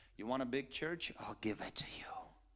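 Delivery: soft, hushed whisper, very close. Retelling a voice heard while driving: imitating a whisper. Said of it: "I heard a whisper in my ear".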